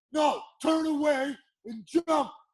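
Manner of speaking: put-on, very high-pitched, loud yell. Recounting a fight, speaker acts out someone shouting an order, retelling a yell. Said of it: "Baroni yells".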